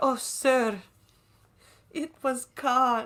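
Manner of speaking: high, slow, choked-up voice, almost crying. Retelling a sad film line: imitating someone near tears. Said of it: "He's almost crying, isn't he?".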